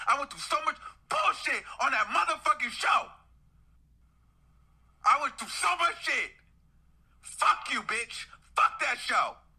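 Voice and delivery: furious, enraged rant. Ranting after being blamed for tanking a show, furious. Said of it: "I'm so fucking mad".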